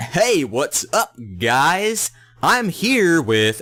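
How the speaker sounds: scripted, nervous host voice, high and slow. Retelling how a game director greeted the crowd: imitating a nervous scripted greeting. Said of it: "he just sounded so, like, scripted and so nervous".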